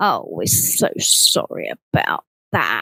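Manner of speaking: slow, hollow, compassionless, sarcastic tone. Retelling what a customer services person said on the phone: imitating a sarcastic apology. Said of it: "It was just, like, sarcastic".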